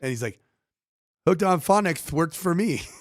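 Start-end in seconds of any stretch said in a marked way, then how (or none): 1.3-2.8 put-on child's lisp, higher pitch. Recalling the kid from Hooked on Phonics, imitating a kid's lisp. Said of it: "had a lisp".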